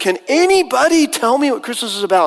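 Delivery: high, frantic, desperate screamed outcry. Retelling the Christmas play scene in tatters: retelling Charlie Brown's scream. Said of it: "he screams".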